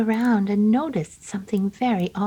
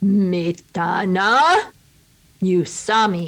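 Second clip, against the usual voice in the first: unrecognizable deep voice, drawn out very slow; 4 dB louder than usual. Narrator voicing the transformed wife calling to her husband, a deep unrecognizable voice. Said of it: "but a giant [name] she had transformed into a mountain witch. / And the door opened and in came not his beautiful young wife, but a giant [name] she had transformed into a mountain witch. / but a gian".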